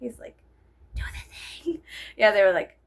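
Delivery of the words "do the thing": hushed, breathy, eerie villain-style whisper. Describing a scene from the first Harry Potter movie, in a Voldemort whisper. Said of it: "like whispers, like you know how Voldemort whispers".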